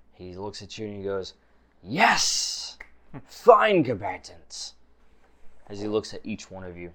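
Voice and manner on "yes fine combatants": thrilled, eager, excited high-pitched voice. Voicing an excited arena master greeting the combatants: excited Grandmaster voice. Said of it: "you see he is just excited".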